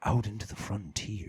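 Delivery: hushed, breathy, eager, excited voice. Doing an impression of an excited astronomer lowering his voice: Neil deGrasse Tyson impression. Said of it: "then he starts lowering his voice".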